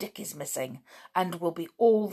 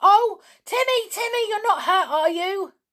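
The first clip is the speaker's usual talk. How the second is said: very high, loud, shrieking scream; 6 dB louder than usual. A girl cries to her dog after a gunshot, screaming out. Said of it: "George screamed".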